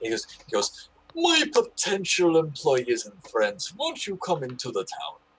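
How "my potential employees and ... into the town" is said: over-the-top, swooping, jovial king voice. Voicing a hefty man in a fur cloak calling from a tower: jovial over-the-top king voice. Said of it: "this dude is trying to portray like he is a king".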